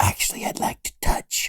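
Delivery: soft whispered voice. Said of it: "George is looking at the penis and goes".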